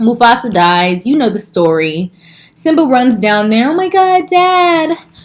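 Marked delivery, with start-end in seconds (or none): 3.7-5.0 high, slow, drawn-out crybaby whine. Retelling the movie scene where Simba runs down to his dad, in Simba crybaby voice. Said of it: "with his little crybaby voice".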